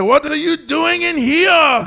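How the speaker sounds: bad fake Japanese accent, high pitch, slow.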